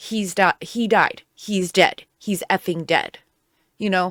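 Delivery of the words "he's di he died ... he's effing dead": put-on flat, emotionless, matter-of-fact deadpan. Acting out a woman's answer when asked why she had the phone, deadpan. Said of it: "looks at them deadpan and goes".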